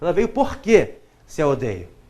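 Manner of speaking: quê said strongly, heavily stressed and accented. Explaining why porquê carries an accent: stress on the word quê. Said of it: "Se este que é mais forte, é acentuado".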